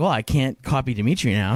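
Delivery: normal talking voice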